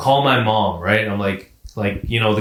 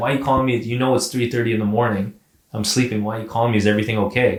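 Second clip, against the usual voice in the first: ordinary talk, nothing marked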